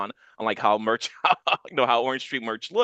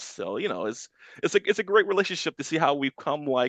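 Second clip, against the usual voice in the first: plain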